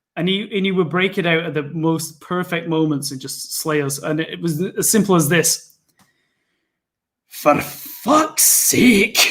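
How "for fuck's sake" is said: put-on Scottish accent. Quoting the line he'd break out at perfect moments, put-on Scottish accent. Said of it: "I was getting in the mindset to do him".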